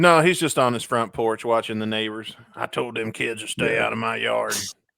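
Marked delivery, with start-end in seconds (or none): 2.5-4.5 put-on rough, creaky old man voice. Playing a neighbor watching from his front porch: old Clint Eastwood voice. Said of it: "when I'm doing this voice, I'm thinking of Clint Eastwood".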